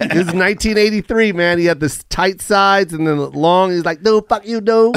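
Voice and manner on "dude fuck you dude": put-on thick Vietnamese accent. Imitating a trash-talking next door neighbor: imitating a Vietnamese neighbor's thick accent. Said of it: "When I do the Vietnamese accent".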